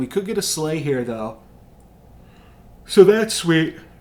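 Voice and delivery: yawning while talking. Commenting on a game run, yawning while talking. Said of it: "Apologies for the yawning".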